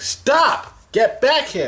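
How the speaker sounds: high-pitched hollered yell. Retelling shouting at people running toward the door, retelling own yelling. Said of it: "and I'm yelling".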